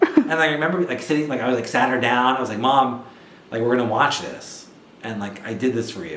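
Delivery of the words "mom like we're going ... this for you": ordinary delivery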